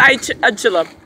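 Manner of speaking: ordinary talk, nothing marked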